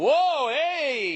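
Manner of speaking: high, loud, leering catcall.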